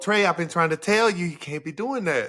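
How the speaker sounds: put-on Mississippi accent. Retelling his own words to a player named Trey, imitating a Mississippi accent. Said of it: "That Mississippi accent".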